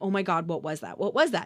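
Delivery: startled, panicked, jolted and alarmed outburst. Retelling waking up to a loud boom at night: retelling own startled panic. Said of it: "sitting straight up going".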